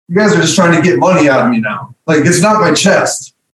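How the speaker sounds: ordinary delivery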